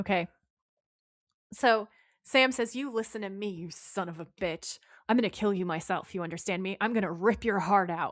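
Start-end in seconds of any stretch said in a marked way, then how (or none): 2.8-8.1 mock menacing big-man voice. Speaker retells a character's threat from an earlier episode: imitating Sam's scary big-guy voice. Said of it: "he says it in a really scary big guy like".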